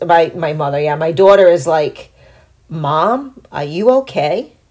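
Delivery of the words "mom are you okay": mock, very slow, earnest, serious, worried voice. Retelling a daughter asking after a fall: imitating daughter's serious concern.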